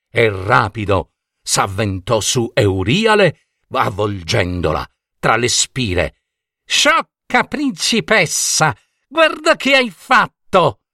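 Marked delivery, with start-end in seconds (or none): 6.7-10.8 very high-pitched yell, shouting. Seized by a giant anaconda, the captive shouts at the princess. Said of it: "urlò Euriale".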